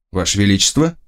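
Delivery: ordinary delivery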